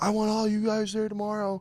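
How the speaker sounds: play-acted, rowdy, high, hyped-up scream. Retelling how a fighter shouted at the crowd outside his van: imitating Ian Garry screaming. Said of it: "he's fucking screaming at all of us".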